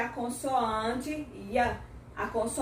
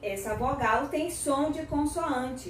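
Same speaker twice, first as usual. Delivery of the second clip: normal talking voice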